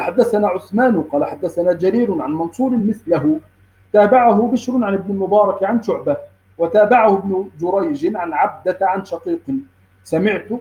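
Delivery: plain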